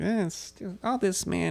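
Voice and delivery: slow, unhurried, stretched-out delivery. Retelling what a fellow comic said about the business: imitating Bob Morrissey. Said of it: "That was a really good Bob impression".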